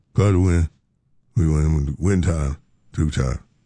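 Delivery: low, flat, unexcited drone. Imagining a post-game interview, speaker does a flat Shaq impression. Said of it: "If it was Shaq, he'd just go".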